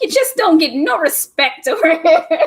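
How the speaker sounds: high, loud, comic complaining tone.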